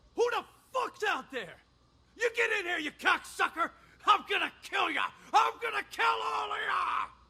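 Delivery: furious, enraged shouting. Acting a manic patient threatening people outside a locked room: furious shouting. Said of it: "I'm gonna need you to calm down".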